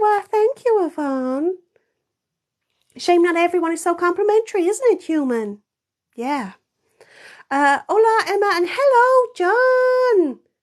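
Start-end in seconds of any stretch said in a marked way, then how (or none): 0.0-1.6 put-on lovely southern belle accent, spoken slower. Thanking Yvonne for a compliment, in a lovely southern belle voice. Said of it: "I sound like a lovely southern belle".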